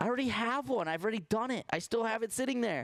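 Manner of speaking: shouting. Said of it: ""Why are you yelling?"".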